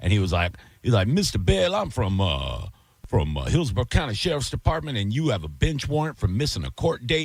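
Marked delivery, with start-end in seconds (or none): 1.1-7.3 put-on smooth, easygoing, cool country accent, swooping. Retelling a scam caller's words on the phone: imitating a cool country accent.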